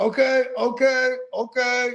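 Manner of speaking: very high-pitched put-on Eastern European accent. Acting out a man with his hands up as others start coming, imitating an eastern european accent. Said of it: "he's got an Eastern European accent".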